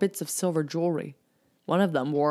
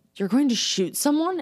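pressing, demanding, very high-pitched voice; 10 semitones higher, 3 dB louder than usual. Erica, to the captain readying his gun, demanding. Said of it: "Erica demanded, eyes widening".

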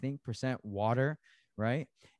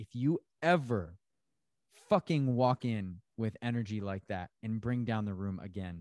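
plain

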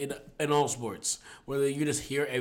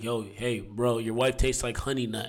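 put-on whisper, lower; 3 semitones lower than usual. Retelling what one basketball player said to another: imitating someone whispering. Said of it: "he just whispered in his ear".

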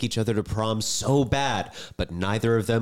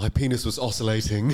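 put-on British royal voice. Asked to show it, quoting his memoir: Prince Harry impression. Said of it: "a great Prince Harry impression".

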